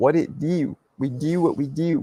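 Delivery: slow, put-on Baltimore street accent. Greeting someone by name, the speaker shows off a Baltimore accent. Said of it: "That's my Baltimore accent".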